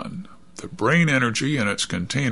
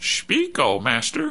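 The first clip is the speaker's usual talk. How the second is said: squeaky robot voice; 3 semitones higher than usual. Reading a story where Bud tests the robot's transmitter, in a squeaky robot voice. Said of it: "imitating a squeaky robot voice".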